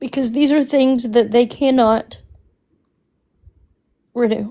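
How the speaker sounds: voice strained, holding back tears. Saying how hurt they are by what happened, holding back tears. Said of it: "I don't wanna get emotional again".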